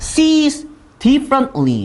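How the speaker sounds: sees drawn out very slow and high.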